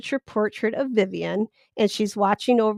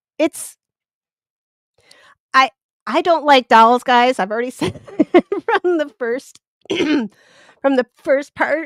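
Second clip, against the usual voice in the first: emotional voice catching, a little choked up; 4 semitones higher, 6 dB louder than usual. Showing viewers a handmade doll bed and tray, getting choked up. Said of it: "I got a little choked up".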